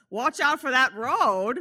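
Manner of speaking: put-on loud Maine accent with New England drawl. Retelling a film scene where a man scoops someone up in time, Maine accent. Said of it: "an amazing main accent, which I will be attempting to replicate".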